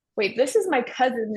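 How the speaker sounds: ordinary talk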